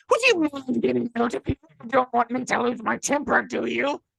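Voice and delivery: very high, raspy, creaky cartoon-duck voice. Retelling a story someone read aloud, in Darkwing Duck's voice. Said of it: "it's Darkwing Duck's voice".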